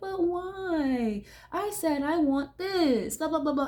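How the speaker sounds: put-on childish whiny tantrum, "why" drawn out. Imagining a little girl refused by her dad: acting out a child's tantrum. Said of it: "starts throwing a tantrum".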